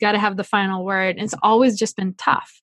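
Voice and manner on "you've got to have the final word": usual speaking voice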